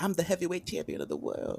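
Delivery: high-pitched, swooping, wide-swinging boxer voice. Knocking at the door to join the hangout: Mike Tyson voice. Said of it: "we got Mike Tyson".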